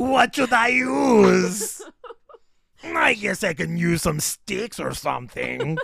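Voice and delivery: high, loud monster voice, big, stretching out use. Performing a Krampus bit while another person can't stop laughing; Krampus voice. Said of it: "that Krampus voice".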